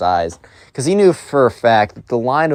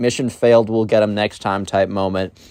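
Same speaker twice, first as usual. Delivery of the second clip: ordinary delivery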